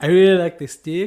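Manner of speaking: put-on New Zealand accent. Imitating a friend from New Zealand, bad New Zealand accent. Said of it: "with her accent that I'm going to butcher".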